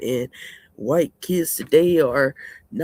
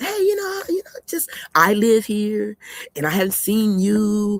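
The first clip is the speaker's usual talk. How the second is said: sly, sneaky, nosy, pitched-up prying tone; 5 semitones higher than usual. Describing how people ask about their business, imitating a sneaky tone. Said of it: "you do it with that little sneaky shit".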